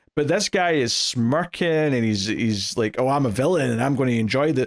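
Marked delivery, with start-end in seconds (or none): none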